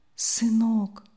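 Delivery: barely audible, very faint. A sick mother calls to her son Yasha: barely audible call. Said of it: "чуть слышно позвала больная".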